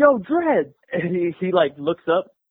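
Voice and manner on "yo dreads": yelled, high-pitched. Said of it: "I yell out".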